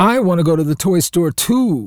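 delighted, gleeful tone. Hearing about class visits to a toy store, a listener chimes in with glee. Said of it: "said Tiny with glee".

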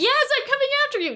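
eager, high, fast female squirrel voice.

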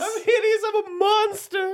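very high, squealing, frantic, panicked freak-out. Retelling how Starina locked the door on Armand, imitating Starina freaking out. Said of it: "Like freaking".

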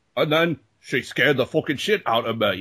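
attempted Polish accent. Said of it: "I just did perfect p-, Polish for you".

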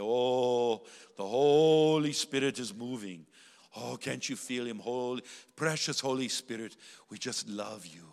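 slow Scottish brogue, stretching out each "oh". Retelling what she would say on entering a room: Kathryn Kuhlman impression with Scottish brogue. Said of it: "her long flowing robes and her Scottish brogue".

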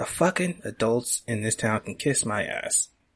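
hushed whisper, under the breath, in passing. In a role-play scene, walking past the secretary, whispering. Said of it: "I whisper that as I walk past her".

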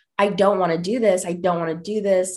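put-on pleading, begging tone. Retelling being guided to the school psychiatrist's office, acting out past pleading. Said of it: "Like I was pleading".

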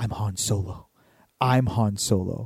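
thrilled, super psyched, savoring, very slow and drawn-out. Retelling a kid's words in line for a ride: imitating someone super psyched. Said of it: "super psyched".

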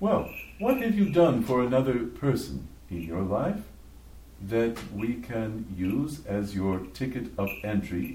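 ordinary talk

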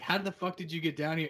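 normal talking voice

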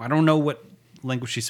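flustered tone.

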